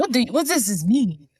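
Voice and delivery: high, put-on mock Russian accent. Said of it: "even the way she said word".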